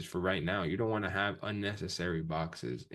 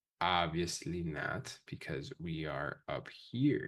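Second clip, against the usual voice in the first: a little slower and softer. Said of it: "I'm gonna speak just a little slower".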